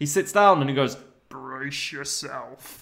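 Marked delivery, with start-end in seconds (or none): 1.3-2.8 menacing, rough-edged, creaky, threatening rasp. Retelling a film scene where a character sits down: imitating Mr. Bean, threatening. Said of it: "like that in a really threatening way".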